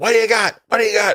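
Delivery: very high-pitched, frantic screaming. Retelling an actor screaming in the film Heat, retelling a scream. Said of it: "he was screaming".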